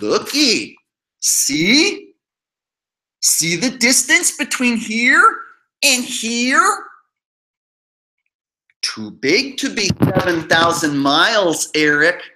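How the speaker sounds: very slow, spelled-out, basic, condescending delivery. Speaking to another channel's subscribers, the speaker keeps talking really slow. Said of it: "I have to talk really slow".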